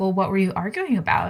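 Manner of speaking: ordinary talk, nothing marked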